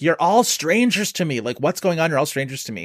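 play-acted, light, mild half-shout. Describing a scene, the speaker acts out a character's line to her family: retelling a yell. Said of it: "Carrie Coon eventually just sort of yells up".

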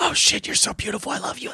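soft, hushed, very quiet whisper. Acting out a kid in a note fight: whispering like the Other Guys cop fight. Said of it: "you're all whispering like the cop fight in Other Guys".

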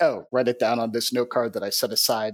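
ordinary delivery

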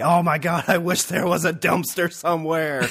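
high shouting. Retelling shouting while watching a scene: retelling own shouting. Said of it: "I was shouting like".

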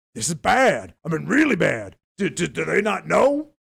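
rough, creaky put-on voice. Speaker acting out someone's reaction to the market, pseudo Mr. T voice. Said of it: "I'm doing a pseudo Mr. T voice".

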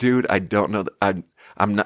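ordinary talk

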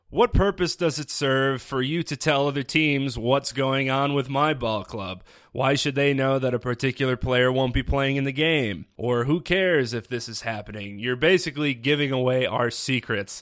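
ordinary delivery

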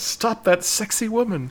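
high-pitched, loud mock yelling. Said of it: "the security guard yells".

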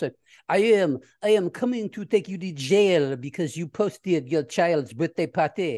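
put-on French accent. Imagining officials enforcing a new law at someone's house, in Inspector Clouseau's French accent. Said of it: "that's a great French accent".

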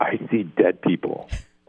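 hushed, whispered aside. Retelling what a missionary said while looking at the quad: imitating a whisper. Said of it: "he whispered".

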